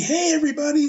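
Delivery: very high, all-happy, cheerful voice. Describing the character's entrance, imitating him acting all happy. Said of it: "He can come out all happy".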